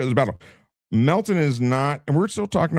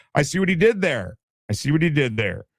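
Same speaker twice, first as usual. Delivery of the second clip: ordinary delivery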